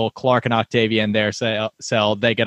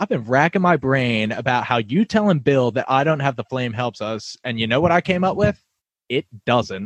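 ordinary talk

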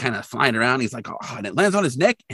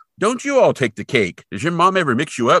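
put-on mid-strength Canadian accent; 4 semitones higher, 4 dB louder than usual. Retelling what a man says to kids staring up at him: canadian accent. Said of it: "he's totally got a mid Canadian accent".

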